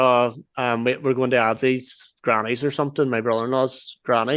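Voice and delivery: plain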